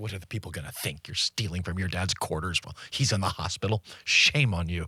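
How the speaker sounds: put-on stern, scolding grandmotherly voice. Describing the inner voice that shames you, doing the inner grandma voice. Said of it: "That's the inner grandma voice".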